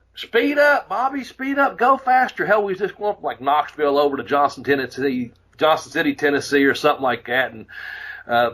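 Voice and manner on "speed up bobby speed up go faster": very high, stretched, drawn-out nagging scream. Retelling a passenger screaming at the driver to go faster: imitating her screaming. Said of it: "she keeps screaming".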